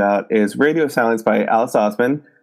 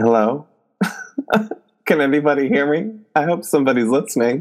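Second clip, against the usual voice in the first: giggling mid-line, breaking up, laughing through words; 3 semitones higher than usual. Trying to open a podcast recording, laughing while talking. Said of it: "I can't do it without laughing".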